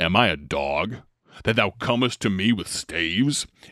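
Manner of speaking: deep, gravelly voice, dropped low. Reading the Bible story aloud, voicing the Philistine speaking to David: deep, gravelly voice. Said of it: "he had this deep, gravelly voice".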